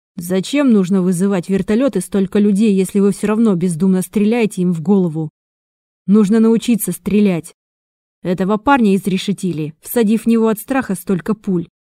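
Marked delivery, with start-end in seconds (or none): none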